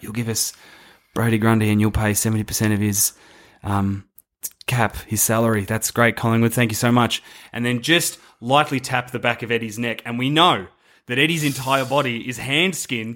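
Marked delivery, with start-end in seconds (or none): 0.0-7.2 muttered under the breath. Imagining Stephen Wells making a quiet deal at Collingwood: Stephen Wells saying quietly under his breath. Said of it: "just quietly under his breath".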